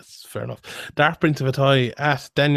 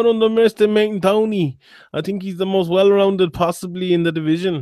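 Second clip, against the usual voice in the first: put-on Dublin accent, much higher; 6 semitones higher, 4 dB louder than usual. Reading out a listener's question from a Donegal man, in a Dublin accent. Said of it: "Do you like my Dublin accent there?".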